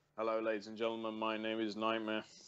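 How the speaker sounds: deadpan, low, flat monotone. Showing how to do the self-introduction bit, flat monotone. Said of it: "You got to do it monotone as well".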